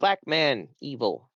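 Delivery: hissed, broken goblin-voice speech. Voicing a goblin who speaks broken common to the players: hissing goblin voice. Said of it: "He hisses and he says".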